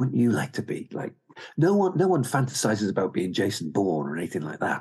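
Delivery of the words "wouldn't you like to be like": put-on seductive whisper, higher. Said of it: "seductively just whispering to you".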